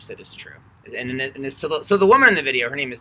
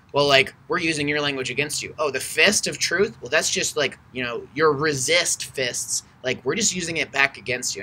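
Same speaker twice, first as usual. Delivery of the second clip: plain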